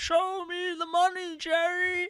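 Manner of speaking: very high, drawn-out, over-the-top digitized video game voice. Describing a game where hitting boxes reveals money, imitating its digitized voice clip. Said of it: "That was my best attempt to do digitized voice".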